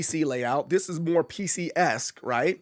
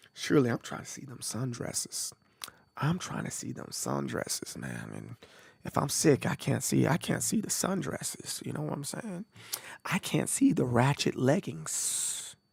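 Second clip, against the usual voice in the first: soft, hushed, confiding whisper; 4 semitones lower, 8 dB quieter than usual. Confiding an aside to the audience, whispering. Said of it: "I'm gonna whisper this to you guys".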